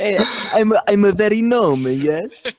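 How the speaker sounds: loud, very high-pitched fake Italian accent. Playing a new head chef in a joking bit, in a fake Italian accent. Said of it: "Do a fake Italian accent".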